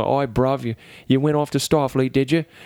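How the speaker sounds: put-on working-class Cockney accent. Speaker acts out a TV character's brother teasing him: working-class Cockney accent. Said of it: "speaks with like a working class Cockney accent".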